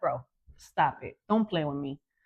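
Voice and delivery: not-soft, sharper voice. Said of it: "then a different tone comes out".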